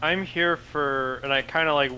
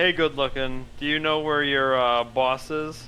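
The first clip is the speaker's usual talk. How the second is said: ordinary delivery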